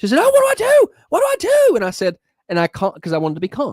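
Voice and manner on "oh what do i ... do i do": very high, loud, frantic panicked cry. Recounting a driver taking an exit lane, imitating her panicked screaming. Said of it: "she starts screaming".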